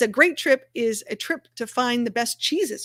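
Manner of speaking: ordinary delivery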